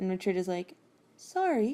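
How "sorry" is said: mock baffled, bewildered, high-pitched, confused delivery. Retelling a book scene where a character apologizes: imitating a super confused apology. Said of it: "he's super confused".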